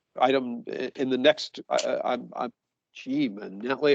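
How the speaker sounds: stammering and stuttering. Moving on to the next case item, stammering and stuttering. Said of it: "I apologize for stammering and stuttering".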